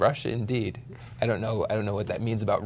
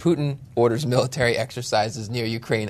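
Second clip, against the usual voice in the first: usual speaking voice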